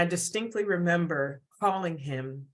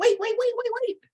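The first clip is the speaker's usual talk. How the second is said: tiny, small, very high little voice; 4 dB louder than usual. Retelling a woman calling out on the phone before he hung up, tiny little voice. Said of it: "this tiny, tiny little voice".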